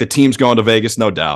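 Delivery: ordinary delivery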